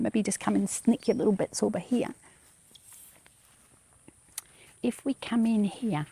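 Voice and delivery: hushed, soft half-whisper. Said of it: "I don't know why I'm whispering".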